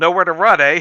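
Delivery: very loud, high, nasally voice. Voicing a game character who corners someone: nasally voice. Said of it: "he seems like he has, like, a nasally voice".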